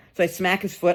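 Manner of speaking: usual speaking voice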